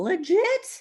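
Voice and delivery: excited, cracking, swooping voice. Speaker telling listeners about stackable bonuses, voice cracking with excitement. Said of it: "See how my voice cracked right there?".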